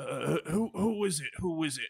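rough, gruff voice. Telling a story, a voice answers from behind a locked library door, gruff voice. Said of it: "you hear in a gruff voice".

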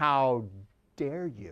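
put-on voice, loathing and contemptuous. Speaker retelling a father confronting a Target store manager, with mock loathing. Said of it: "with just loathing in his voice".

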